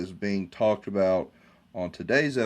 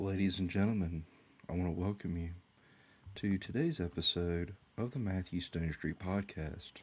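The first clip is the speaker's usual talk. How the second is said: soft, very quiet, calm, steady tone; 2 semitones lower, 10 dB quieter than usual. Podcast host welcoming listeners to today's episode, in a calm voice. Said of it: "I'm talking in a calm voice".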